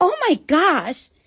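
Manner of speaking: put-on girlish Staten Island accent. Retelling the OB-GYN's reaction during a sonogram, in a Staten Island accent.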